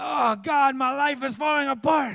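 put-on Italian accent.

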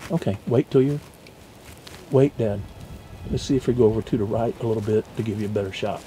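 whispered, very low, hushed and close. Guiding dad to wait for a better shot at the buck, whispering.

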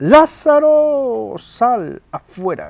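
very loud, high, slow, drawn-out cry.

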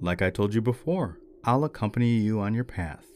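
ordinary talk

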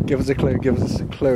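plain

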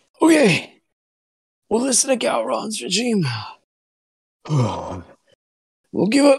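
heaving, out-of-breath, raspy voice, very high-pitched. Retelling a scene, the speaker acts out a man gasping for breath, raspy. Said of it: "breathing all heavy and trying to, you know, catch his breath".

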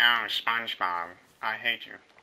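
half-hearted put-on cartoon voice. Pressed by someone to do your best Squidward, give in with a half-hearted Squidward impression. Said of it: "Do Squidward".

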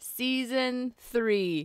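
slow announcer voice.

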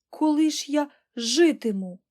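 frightened cry. Reading a novel, Pollyanna exclaims to Aunt Polly: frightened exclamation. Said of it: "злякано вигукнула Поліана".

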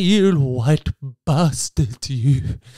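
put-on old-timey theatrical, dramatic voice. Acting out the alleged insult as if in Les Miserables: old-timey Les Miserables delivery. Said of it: "Sounds very old-timey".

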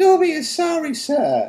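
very high, fretful, anxious little squeak, drawn out. Dobby the elf answers Harry, who has just yelled at him, squeaking anxiously. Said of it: "squeaked Dobby anxiously".

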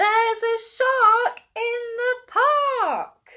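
shrill, high-pitched cry in loudest voice. Reading a picture book aloud, a boy cries out: loudest voice, crying out. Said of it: "In his loudest voice, Timothy cries".

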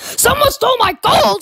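sudden, high-pitched, mild pirate outcry. Playing a pirate in an ASMR roleplay video, shouting. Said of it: "This is supposed to be relaxing".

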